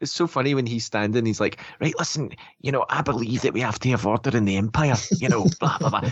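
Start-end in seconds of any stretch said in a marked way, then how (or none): 1.8-6.1 put-on guttural, throaty Glaswegian accent. Imitating an actor's character giving a speech: Alex Ferns impression. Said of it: "he has the most guttural Glaswegian accent".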